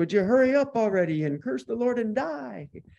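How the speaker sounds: put-on speaking with a Yiddish-inflected accent.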